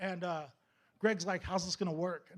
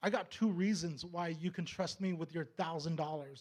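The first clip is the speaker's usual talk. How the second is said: ordinary talk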